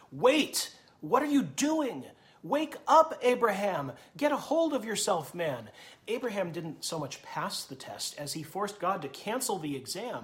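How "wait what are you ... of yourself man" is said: high, loud cry in sheer terror. Voicing the angel of the Lord as a father raises the knife, terrified cry. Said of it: "I hear terror".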